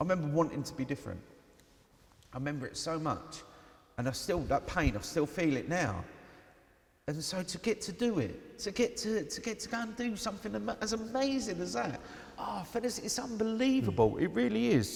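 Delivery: voice catching and choking up with emotion. Speaker describing a personal feeling that still moves them, emotional, voice choking up. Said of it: "Sorry for getting emotional".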